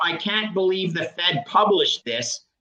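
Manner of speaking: normal talking voice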